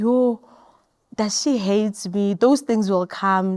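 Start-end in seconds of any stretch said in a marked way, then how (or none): 0.0-2.3 play-acted tearful, wounded, hurt voice. Retelling what she said alone after being shouted at: imitating her own crying. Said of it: "I'll cry and be like".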